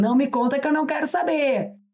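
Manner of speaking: put-on speech through laughter. Quoting words from a service seen on tv: imitating him laughing while talking.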